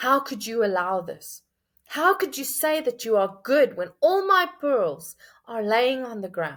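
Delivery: furious, angry, accusing outcry. Acting out people in the ruins screaming at God, imitating an angry shout.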